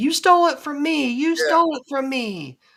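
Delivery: acted-out accusing scream, shrill and very high-pitched. Describing a video where a woman can be heard, imitating her screaming. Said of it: "she was screaming".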